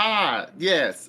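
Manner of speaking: high, blurted shout at full volume. A player's character answers an old man in dark cloaks, shouting. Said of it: "why are you shouting?".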